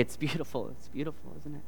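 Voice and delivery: soft, teasing, sarcastic mocking tone. Speaker retells the kids teasing him over a phrase he said often: retelling a mocking remark. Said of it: "And they would mockingly say".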